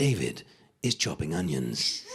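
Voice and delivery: irritating, low, slow, patronising narrator voiceover. Mocking cookery programme voiceovers, doing a patronising TV voiceover voice. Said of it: "a very patronising, irritating voiceover".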